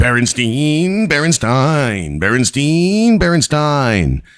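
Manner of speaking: every repeat stretched, pitched high. Retelling a comedian puzzling over how a name is said, in a Tom Green impression. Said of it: "in his typical Tom Green way, just going".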